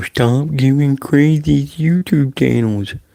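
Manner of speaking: slow read-aloud. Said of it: "I'll read it slow".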